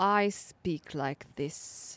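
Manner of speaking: Oxford-style English accent. Showing how an upper-crust Oxford English speaker talks: upper-crust Oxford English accent. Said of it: "Oxford English".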